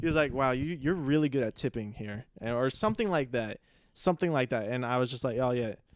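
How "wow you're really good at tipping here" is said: put-on super-sarcastic voice. Retelling a remark from the man who brought the pizza: imitating a super-sarcastic remark. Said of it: "But it was super sarcastic".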